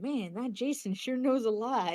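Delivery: hushed whisper. Suggesting what a player could whisper to the game, whispering. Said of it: "You can kind of whisper".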